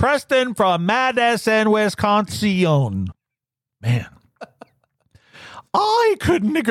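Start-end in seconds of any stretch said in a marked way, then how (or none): 3.8-6.7 put-on very high, swooping elderly woman voice. Podcast host reading a listener's message aloud in an old lady voice. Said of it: "I'm doing an old lady voice for Preston".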